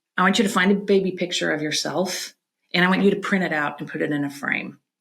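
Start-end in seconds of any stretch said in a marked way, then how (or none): none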